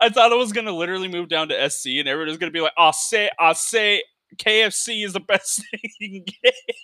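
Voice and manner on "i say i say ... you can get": high-pitched, slow, drawn-out cartoon drawl. Retelling the belief that everyone down south talks like Foghorn Leghorn. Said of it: "sound like Foghorn Leghorn".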